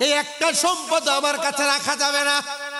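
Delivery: high, loud king voice calling out.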